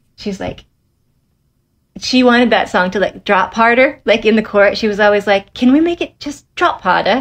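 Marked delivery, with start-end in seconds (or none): 5.6-7.2 put-on higher-pitched British accent. Retelling what the speaker's London-based manager kept asking, imitating Liz's British accent. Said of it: "she's always like with her like British accent".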